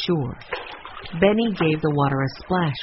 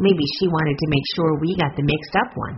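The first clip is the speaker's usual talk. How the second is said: usual speaking voice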